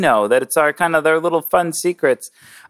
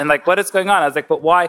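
ordinary delivery

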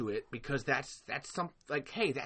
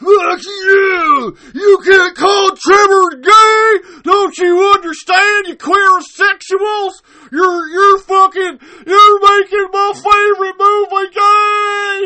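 put-on very high, very loud, drawn-out furious rant; 24 dB louder than usual. Imitating a vocal minority of fans reacting to the topic: imitating angry fans ranting. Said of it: "of Tremors fans, that the instant that this topic even gets brought up is just straight fucking".

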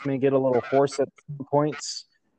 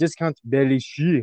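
mock French accent, lightly applied. Host introduces his guest's fantasy football team, in a little french accent. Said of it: "the little French accent I put on".

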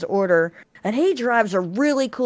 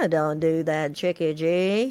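slow, unhurried, drawn-out voice; 4 semitones lower than usual. Imitating a tall friend who has the Bob Ross gene: imitating Lee's Bob Ross-like voice. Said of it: "He's like".

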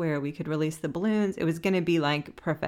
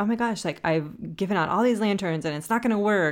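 put-on frantic, panicked worrying, fast babble; 3 semitones higher than usual. Retelling the moment a plan failed completely: retelling own past panic. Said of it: "now I'm, like, panicked".

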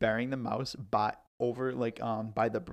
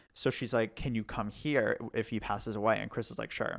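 ordinary delivery

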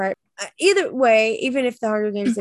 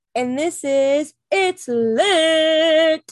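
mock sports announcer delivery, higher pitch; 7 semitones higher, 4 dB louder than usual. Introducing the show with a guest, mock sports announcer voice. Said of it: "You're like a sports announcer today".

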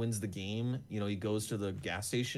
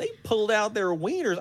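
very high-pitched, put-on West Texas accent; 11 semitones higher, 6 dB louder than usual. Retelling what the cops said the next morning, in a west texas accent. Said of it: "this is my West Texas accent".

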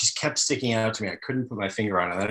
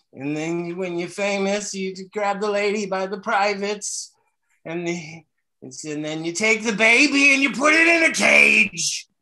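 put-on goofy comic voice, higher; 10 semitones higher, 4 dB louder than usual. Imagining further lines done as a comic impression: Jerry Lewis impression. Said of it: "doing Jerry Lewis this whole time".

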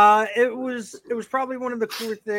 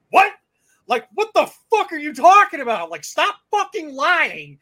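put-on voice raised slightly, high and swooping; 8 semitones higher, 5 dB louder than usual. Retelling an argument with a stranger: imitating own raised voice. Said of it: "I started raising my voice a little bit".

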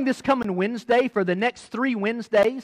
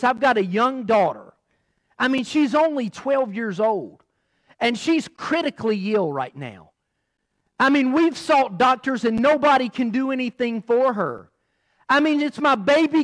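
usual speaking voice

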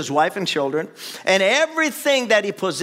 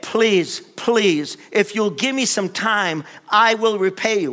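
mock pleading voice, slower. Retelling how a debtor begged his master, acting out begging. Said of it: "He literally begged".

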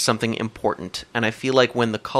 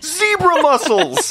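very high, victorious, triumphant scream; 5 dB louder than usual. Retelling how the listener finally screamed out a Z word during a road trip game. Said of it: "you scream out".

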